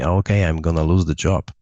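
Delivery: plain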